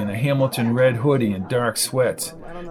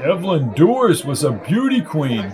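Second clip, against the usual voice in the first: ordinary delivery, nothing marked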